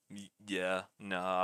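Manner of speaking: checked-out, uninterested, bored tone, low voice. Retelling own calling of the match: imitating own bored voice. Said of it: "I was kinda bored calling the match".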